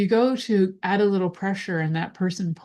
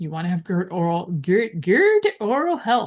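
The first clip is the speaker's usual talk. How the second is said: brief, light, sing-song Swedish accent. Giving advice to listeners, slipping briefly into a slight Swedish accent. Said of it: "I became Swedish for like 0.5 seconds".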